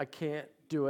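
put-on crying, tearful pleading voice. Retelling a son's words before school: imitating a son crying. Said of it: "And he was crying, he's in tears".

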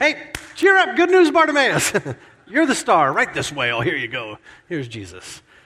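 silly, swooping, sing-song, welcoming crowd voice. Retelling how the crowd then welcomed bartimaeus: imitating a fickle, silly crowd. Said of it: "how fickle is this silly crowd".

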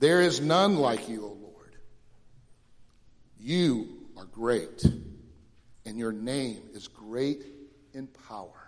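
slow reading. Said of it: "I'm gonna read it slowly".

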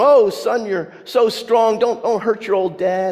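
high, playful, put-on alarmed tone. Imagining a big father wrestling his small son: imitating mock alarm. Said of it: "Dad says in mock alarm".

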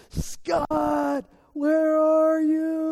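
shrill, high shout at the top of the lungs. Retelling his brother calling out for him from off the trail, imitating a shout at the top of his lungs. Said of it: "shouting at the top of his lungs".

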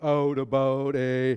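put-on Canadian accent, Canadian vowels in out, about. Speaker retelling family members' attempts at a Canadian accent, in a Canadian accent. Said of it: "do a Canadian accent".

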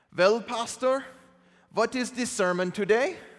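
put-on, attempted German accent. Retelling Werner's weekly question to a pastor, attempted German accent. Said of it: "That's my attempt at a German accent".

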